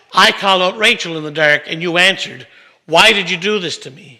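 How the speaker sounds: ordinary talk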